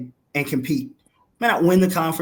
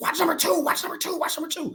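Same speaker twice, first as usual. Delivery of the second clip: acted, very high, frantic shrieking scream; 14 semitones higher, 5 dB quieter than usual. Retelling a lady at the courts watching a player: imitating a screaming lady. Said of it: "She's screaming".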